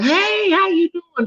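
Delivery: very high, slow, sweet, sugary friendly voice. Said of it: "they'll just be like".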